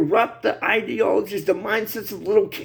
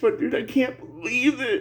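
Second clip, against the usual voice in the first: tearful, crying voice, speaking through tears; 3 semitones higher, 4 dB quieter than usual. Speaker talking about his sons and grandsons living in this, crying. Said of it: "I'm sorry I'm crying like a bitch".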